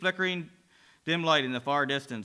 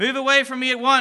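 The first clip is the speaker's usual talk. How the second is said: booming, thunderous scream, high and loud; 8 semitones higher, 7 dB louder than usual. A man trapped in blackness with a demon screams at it, thunderous scream. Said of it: "screams the man in a thunderous voice".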